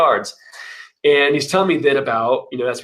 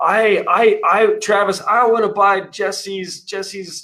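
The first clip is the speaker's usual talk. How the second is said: mock very slow drunken slur, pitched up; 7 semitones higher than usual. Retelling a late-night voicemail from a caller, imitating slurred drunken speech. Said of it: "kind of slurred".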